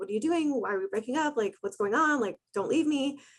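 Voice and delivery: acted-out pleading, begging voice. Retelling own words right after a breakup: imitating own past begging.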